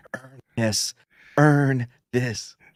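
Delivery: put-on whisper. Picturing someone whispering a line to another person: imitating Slender whispering. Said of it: "I picture Slender just whispering to him".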